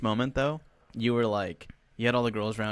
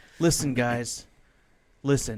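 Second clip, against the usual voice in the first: put-on frustrated voice. Retelling a coach walking over to the players: imitating a frustrated coach. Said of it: "He, like, frustrated?".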